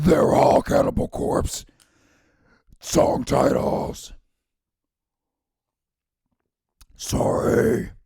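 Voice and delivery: throat-straining voice. Revealing the answer to a quiz round, in a throat-straining voice. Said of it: "It hurts my throat to talk like this".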